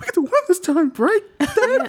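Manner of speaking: put-on very high little-kid voice. Retelling a character's line to the others, imitating a child's voice. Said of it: "like, a child".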